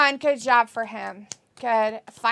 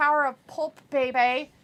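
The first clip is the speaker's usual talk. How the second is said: ordinary talk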